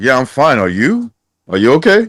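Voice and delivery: put-on, laid-on, sing-song, swooping sarcasm. Imagining how Artem would have answered the man checking on him: mock-sarcastic as Artem. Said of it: "responded back to him like sarcastically".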